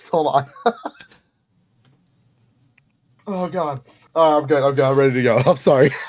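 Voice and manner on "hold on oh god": laughing to tears while speaking. Reacting to a story being told to them, crying with laughter. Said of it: "I'm in tears".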